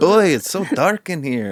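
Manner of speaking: put-on English spoken with a Yiddish-inflected accent.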